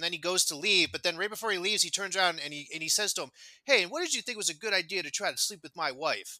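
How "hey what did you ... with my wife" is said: put-on nonchalant, casual tone. Retelling a story, the speaker acts out a husband's parting question: imitating a nonchalant tone. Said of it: "he says it so, yeah, like nonchalantly".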